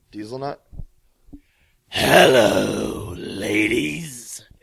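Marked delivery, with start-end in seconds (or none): 1.8-4.4 loud, raspy, rough-edged wrestler delivery. Doing an impression of a wrestler greeting the ladies: Val Venis impression. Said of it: "Val Venus impression".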